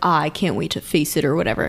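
smug, self-satisfied, very sure tone. Recapping the sneeze stand episode, acting out Jotaro before the fight: mock-smug. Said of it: "being all smug".

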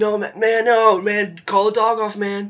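very high, drawn-out eighties surfer dude voice. Voicing a crying character in the game: eighties surfer dude voice. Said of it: "Like an eighties surfer dude".

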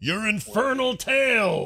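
very high, loud yelling. Playing Nash in a group scene: yelling. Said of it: "yells Nash".

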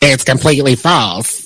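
drop into a low, deep character voice. Reading out Tyler Perry's response to rumors about him and Oprah, use a Madea voice. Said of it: "That was my Madea voice".

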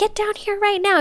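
play-acted irritated, annoyed shout, pitched high. Retelling a story, the husband calls up to his wife: imitating an annoyed call. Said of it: "He's getting annoyed".

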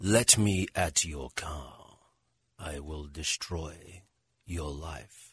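very low, hushed, murmured English supervillain voice. Asked for an english supervillain, the speaker tries an english supervillain voice. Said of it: "do you have a good English supervillain".

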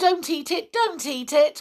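very high, put-on cry of dismay. Peter cries out to the wizard at once, pretending to be most upset. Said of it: "cried Peter at once, pretending to be most upset".

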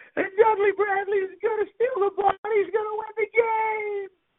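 mock, very high, top-of-the-lungs screaming. Retelling a radio broadcast call from that night: imitating Bob Holliday screaming. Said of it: "screaming at the top of his voice".

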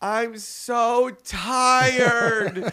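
put-on shrill, high, loud, tearful wailing little kid voice. Retelling what a little kid said at a church service: imitating a crying child. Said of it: "a little kid at our church service that was crying".

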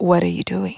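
deep, low put-on voice, dropped down. Imagining waking at night to a voice in an empty room: deep voice. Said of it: "it would be like a deep voice going".

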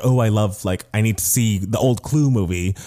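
ordinary talk

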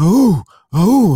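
loud, high-pitched excited cheering.

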